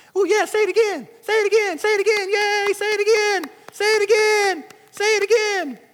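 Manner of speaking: very high-pitched voice of a tiny demon. Acting out the demon of sickness egging someone on: voicing the demon of sickness. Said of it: "the demon of sickness is like".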